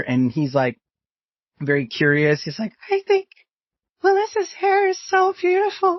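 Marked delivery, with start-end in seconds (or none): 2.9-6.0 put-on very high, awestruck little-kid puppet voice. Introducing the puppet l m, speaking as him: puppet l m's child voice. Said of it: "he's just like me as a kid".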